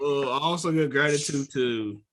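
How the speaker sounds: ordinary talk, nothing marked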